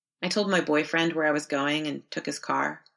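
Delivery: ordinary delivery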